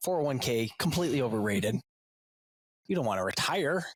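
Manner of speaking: dry, ironic, tongue-in-cheek sarcasm. Talking about parents' spending on travel sports: sarcastic. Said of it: "Sorry, my sarcasm".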